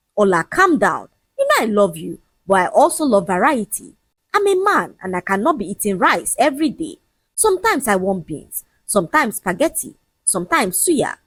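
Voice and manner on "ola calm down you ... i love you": ordinary delivery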